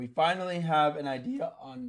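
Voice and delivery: high, slow voice crack, breaking mid-phrase. Walking through a market chart, the speaker's voice cracks. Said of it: "crazy voice crack".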